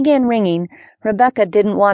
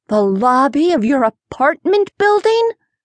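spoken on a gasp, high pitch; 5 semitones higher than usual. [name] reacts to RJ's news about the film shoot, asking with a gasp. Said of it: "[name] asked with a gasp".

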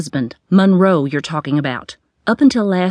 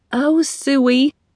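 sniffly, sniffling voice, higher; 7 semitones higher than usual. Reading a story aloud, a character answers a friend: sniffling. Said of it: "she sniffled".

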